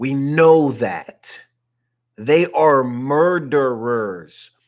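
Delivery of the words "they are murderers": slow, deliberate enunciation, each word spaced out. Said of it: "I'm saying it slow".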